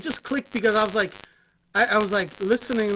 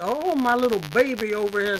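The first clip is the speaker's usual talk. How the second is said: put-on Southern accent. Teasing their little son to annoy him, in a put-on Southern accent. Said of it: "I did it in like a southern accent".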